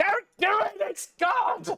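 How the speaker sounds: very high, slow, drawn-out goblin shout. A game narrator voicing a goblin warning the others, goblin shouting. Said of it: "starts shouting".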